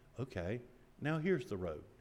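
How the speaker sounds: gentle, sweet and kind, with a soft voice. Quoting a voice that answers someone gone off track, put-on sweet voice. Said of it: "a sweet voice".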